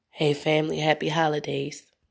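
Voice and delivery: put-on ill voice. Explaining to her viewers she was ill over the holidays, imitating her sick voice. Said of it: "what I did have had me sounding like this".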